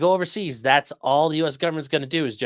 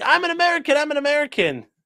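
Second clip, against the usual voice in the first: put-on repeated yell in a very high voice; 14 semitones higher, 3 dB louder than usual. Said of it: "Johnny yelling".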